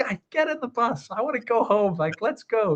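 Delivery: play-acted cross, grouchy, high-pitched shouting. Acting out a man at the front of the bus addressing partying players, imitating a grumpy man yelling. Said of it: "yelling at them like".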